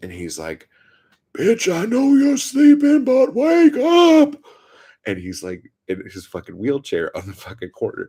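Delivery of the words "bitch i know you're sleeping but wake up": shrill, very high, full-volume, drawn-out yell climbing upward. Retelling a man on the corner yelling for a woman, retelling a yell. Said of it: "while he was yelling".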